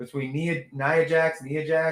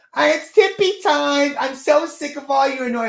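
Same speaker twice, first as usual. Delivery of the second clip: very high, loud, whiny complaining voice; 10 semitones higher, 6 dB louder than usual. Mocking a wrestler's promo: imitating a whiny voice. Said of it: "have the whiniest".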